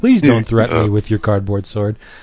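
ordinary talk

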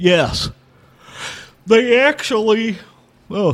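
talking through a yawn. Describing a museum to the other hosts, the speaker breaks off yawning mid-sentence. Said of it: "sorry, I'm yawning".

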